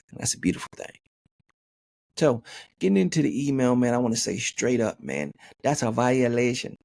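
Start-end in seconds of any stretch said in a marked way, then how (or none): 5.6-6.7 put-on Jamaican accent, lilting on every word. Podcast host starting on a listener's email, in a Jamaican accent. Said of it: "That's my Jamaican accent".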